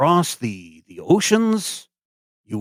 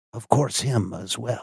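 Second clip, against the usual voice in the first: very quiet, hushed, confiding aside; 5 dB quieter than usual. A game master voices a character who leans in and points to the sky, very quiet. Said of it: "he gets very quiet and he leans in".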